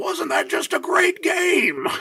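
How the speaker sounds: very high, swooping, burly, gushing Irish brogue. Retelling what the coach said after a game of eight-year-olds: Coach Leahy's burly Irish brogue. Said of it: "burly Irish brogue just says".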